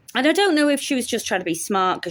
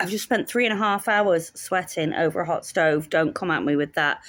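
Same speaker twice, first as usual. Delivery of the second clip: ordinary delivery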